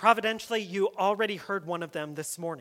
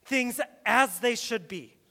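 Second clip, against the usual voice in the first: ordinary talk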